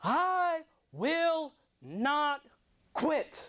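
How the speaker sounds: very high, very drawn-out, defiant full-volume shout. Retelling shouting at the devil in the living room: retelling a shout at full volume. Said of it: "I shouted".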